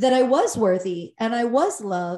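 ordinary talk, nothing marked

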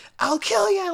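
sudden, high-pitched shouted yelling. Recapping a scene, the speaker acts out a man threatening a boy, retelling a yell. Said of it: "he yells that time".

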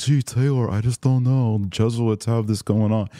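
silly, goofy, put-on doubting voice. Podcaster showing how he voices objections on the show, in a put-on objection voice. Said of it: "move into voices where it's like".

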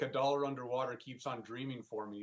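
ordinary talk

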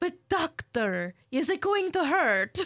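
put-on Transylvanian accent. Act out a vampire asking the dentist pulling her fang, in a typical Transylvanian accent. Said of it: "typical quote-unquote Transylvanian accent".

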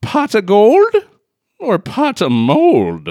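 very high, very slow, stretched-out delivery. Asking a question in rhyme about the film: leprechaun accent. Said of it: "That was a spot-on accent".

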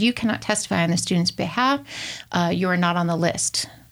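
usual speaking voice

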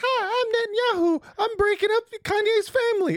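put-on puppet voice, pitched way up. Retelling someone doing a voice with a net as puppet: Netanyahu puppet voice. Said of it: "he starts doing the voice".

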